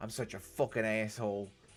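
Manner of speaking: bad attempted New Jersey accent. Retelling what a coworker said to the speaker: attempted New Jersey accent. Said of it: "he's got a very thick New Jersey accent".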